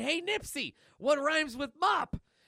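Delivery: high-pitched scream at full volume. Reading a comic aloud, a character yells at a lady: screaming. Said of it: "Milk is screaming".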